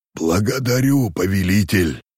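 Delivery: groaning. Narrator reads a messenger thanking the ruler, groaning. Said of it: "простонал Таузак".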